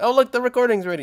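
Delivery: tiny, very high character voice. Describing the voice actor who plays Polly, imitating Polly's voice. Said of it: "the little one that's like".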